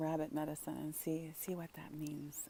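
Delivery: very soft, gentle whisper full of love.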